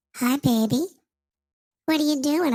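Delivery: put-on sounds like a two-year-old. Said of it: "I know I sound like I'm two".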